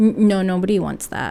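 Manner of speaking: ordinary delivery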